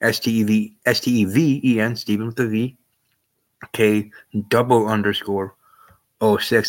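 slow, unhurried, careful, deliberate letter-by-letter spelling out. Spelling out a social media handle for audio listeners: speaking slowly. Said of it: "I'm only saying this slowly".

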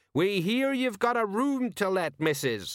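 loud, high-pitched shouting. Hammering on a door, a man yells through it to the woman inside. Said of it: "he yelled".

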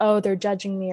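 ordinary delivery

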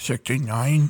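put-on thick throaty fat-guy voice. Retelling what someone else said, in a put-on throaty fat-guy voice. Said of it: "Let me sound like a fat guy".

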